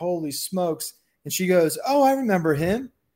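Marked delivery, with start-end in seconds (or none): 0.0-0.9 thrilled, excited shouted outburst. Recalling standing up shouting while watching a walk-off with his wife; retelling a shout. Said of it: "I was like shouting like".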